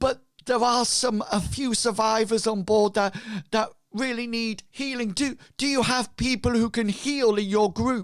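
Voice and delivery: upset and anxious. Voicing a ragged, blood-stained survivor asking for healers: distressed. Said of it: "he seems to be, um, distressed".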